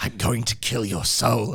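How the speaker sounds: put-on horror slasher villain voice. Wishing a friend's scare routine sounded like Freddy Krueger, doing a Freddy Krueger voice. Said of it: "I'd love it though to have like Freddy Krueger".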